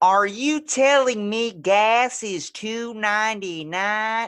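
whiny, shrill Southern accent, very high and loud. Trying out an accent another speaker suggested: whiny Southern accent. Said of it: "It's like Southern, but you just got to put a whiny pitch in it".

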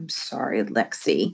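croaked through gritted teeth. Reading a story, the narrator answers Mom's warning to get along; croaked through gritted teeth. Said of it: "I croaked, gritting my teeth".

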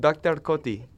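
put-on Kenyan accent on the name. Showing how a teacher from Kenya sounds: imitating Doctor Cody's Kenyan accent. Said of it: "And he sounds like this".

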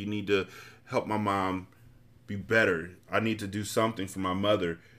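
ordinary delivery

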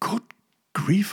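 high, gasping exclamation, words caught in gasp. Hearing the priest's story about his grandmother, the narrator reacts: gasped. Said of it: "I gasped".

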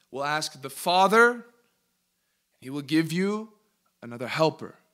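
slow, deliberate, word-by-word reading voice. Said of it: "we just need to read it really slow".

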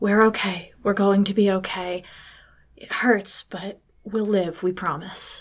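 mumbled in a doubled, two-toned voice. Voicing a shimmery-eyed creature reassuring the others, mumbling. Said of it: "kind of mumbling".

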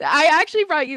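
sudden, abrupt, unexpected, loud, high burst. On a podcast, talking with a guest about making dumplings: suddenly really loud. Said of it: "I just got really loud".

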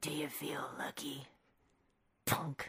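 very low, deep movie-hero delivery. Reading a movie quote aloud in a game: Clint Eastwood impression. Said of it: "I believe this is Clint Eastwood saying".

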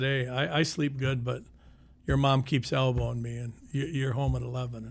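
ordinary delivery

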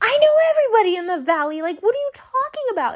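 exasperated, high, fast.

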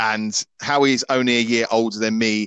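plain

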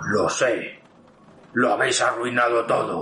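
heavy, deep, low masculine voice. Narrating a role-play scene, speaking as a character in a deep man's voice. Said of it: "con una voz profunda de hombre dice".

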